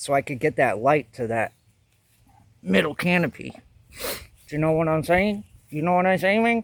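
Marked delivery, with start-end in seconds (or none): 4.5-6.6 playful, put-on Latin American Spanish accent. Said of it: "I just I like doing that accent".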